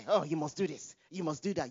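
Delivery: plain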